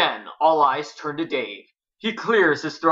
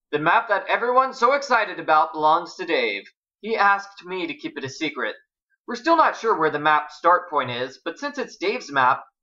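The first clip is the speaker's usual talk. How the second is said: ordinary delivery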